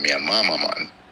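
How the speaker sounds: normal talking voice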